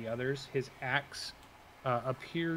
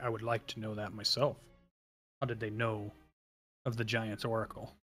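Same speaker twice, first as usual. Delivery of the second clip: deep, rumbling giant voice from low down; 3 semitones lower than usual. Running a tabletop game, the game master speaks as Harshnag in a rumbling voice. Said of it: "you hear his rumbling voice say".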